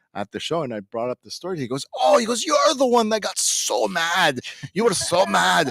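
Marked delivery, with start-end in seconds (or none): 2.4-5.7 terrible put-on Scottish accent, high and slow. Retelling what a man said to him at a show, terrible Scottish accent. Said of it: "that's a terrible Scottish accent".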